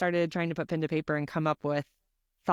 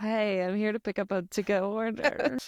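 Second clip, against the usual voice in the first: put-on, very apologetic, sorry-sounding voice; 5 semitones higher than usual. Retelling what was said at the hostess stand: retelling in apologetic voice. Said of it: "in my most apologetic voice was like".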